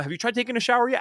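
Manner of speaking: very gentle, mild, kindly tone. Retelling what dad said to a sick child: imitating dad's gentle tone. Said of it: "he would say it in the most gentle way".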